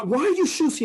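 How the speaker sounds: shrill, high, loud scream. Telling a story about scolding the kids over their shoes, acting out yourself screaming at them, retelling a scream. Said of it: "And I'm screaming at them".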